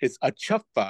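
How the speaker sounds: plain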